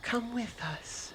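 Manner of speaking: tender, gentle, loving soft whisper. A game master voices a series of whispers the party hears, gentle and loving. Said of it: "sort of like this very gentle tone".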